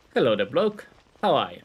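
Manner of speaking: put-on poor English accent. Exploring a castle, the speaker voices a character's greeting in a bad british accent. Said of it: "I can't do English accents or British accents".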